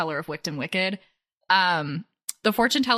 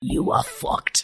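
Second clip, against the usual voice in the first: blunt, unsparing, angry fortune-teller voice. Acting out an angry fortune teller's reading: Granny Third Eye voice.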